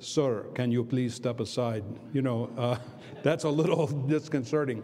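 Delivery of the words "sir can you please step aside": put-on Eastern European accent. Retelling what somebody said on a russian airline flight, in an eastern european accent. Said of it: "somebody with an Eastern European accent says".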